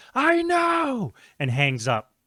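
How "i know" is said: very high-pitched shrieking scream. Retelling how the other person screamed back, imitating someone screaming. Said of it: "he screams back".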